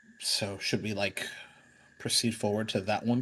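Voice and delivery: quiet, soft, half-voiced half-whisper. Speaking in character to the party in a game: half-whisper. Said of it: "Hideaki will kinda whisper".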